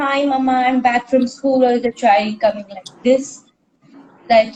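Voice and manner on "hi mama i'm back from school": ordinary delivery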